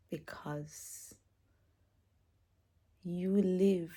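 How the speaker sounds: crying. Speaker thanking the one who has carried and loved them, crying. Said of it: "I don't even know why I'm crying".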